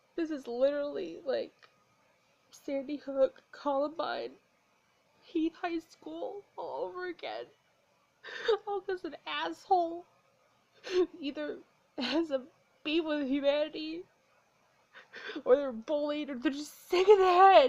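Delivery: upset, tearful speech, talking through tears. Speaking about yet another school shooting that hurt kids, crying while speaking. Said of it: "I'm sorry I'm crying so much".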